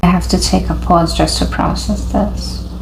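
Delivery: ordinary delivery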